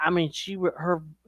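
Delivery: normal talking voice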